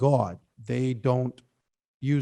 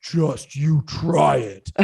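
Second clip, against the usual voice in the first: put-on deep voice, very slow and menacing; 2 semitones higher than usual. Retelling how Ashley, dressed as Travis, leaned across the table: deep voice. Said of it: "like in this deep voice".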